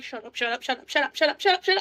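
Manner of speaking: fast, rising, frantic panicked shushing, repeated. A character panics on hearing another character yelling and hushes her, panicked hushing. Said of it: "panicking because she hears Calliope yelling".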